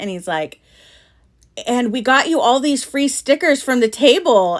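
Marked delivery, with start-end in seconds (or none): 1.7-4.6 put-on eager, thrilled, high, excited news delivery. Retelling how a husband handed over free stickers: imitating Bob sounding excited. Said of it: "he's all excited".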